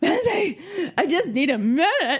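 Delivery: high, strained, frazzled pleading.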